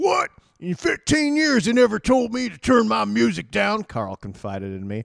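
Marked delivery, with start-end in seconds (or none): 0.0-3.8 raspy voice, high-pitched and loud. Retelling a story about a company veteran: Biker Carl voice. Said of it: "I'll do the Biker Carl voice".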